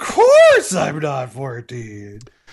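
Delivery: loud voice cracking. Retelling a line from the movie, imitating Johnny Dickey's voice cracking. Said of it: "He says as his voice cracks".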